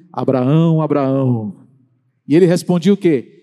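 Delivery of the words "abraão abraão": dramatic, cinematic divine voice calling out. Retelling God calling Abraham: movie-style voice of God. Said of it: "com aquela voz de filme".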